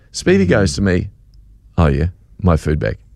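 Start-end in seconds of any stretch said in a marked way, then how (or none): 1.7-2.9 put-on sneering voice, pitched much lower. Retelling Speedy's reply to the speaker, imitating Speedy's sneer. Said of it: "it was a sneering thing in his voice".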